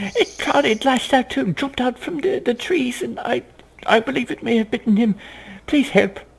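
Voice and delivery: very high, hysterical woman's voice. The game master voices a woman whose husband a vampire attacked, hysterical. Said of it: "she looks quite hysterical".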